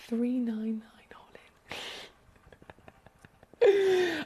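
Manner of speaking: hushed, whispering voice. Announcing the final reduced price of a gemstone: whisper. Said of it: "I feel like I have to whisper when I say these things".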